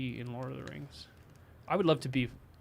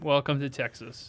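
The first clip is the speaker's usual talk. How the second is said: usual speaking voice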